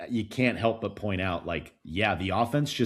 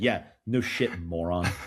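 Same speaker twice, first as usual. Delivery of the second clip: put-on superior, talking-down condescending tone; 3 semitones lower than usual. Repeating back to the other person what they just said, mock-condescending tone. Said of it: "in a condescending tone just said".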